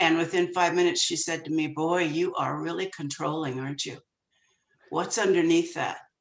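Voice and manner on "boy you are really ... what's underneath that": kind, compassionate voice. Retelling what a new therapist said within five minutes: imitating someone speaking compassionately. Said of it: "she said it very compassionately".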